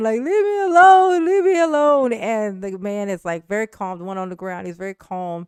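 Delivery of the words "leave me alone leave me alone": high, loud screaming while crying. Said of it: "just screaming, like, crying".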